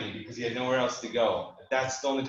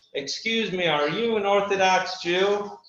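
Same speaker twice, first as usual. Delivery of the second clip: put-on raised, high Southern accent; 7 semitones higher, 6 dB louder than usual. Retelling a flight attendant's question to him: imitating a Southern accent. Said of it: "with a Southern accent".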